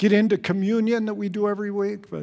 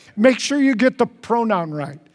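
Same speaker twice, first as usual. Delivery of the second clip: plain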